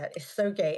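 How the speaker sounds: ordinary delivery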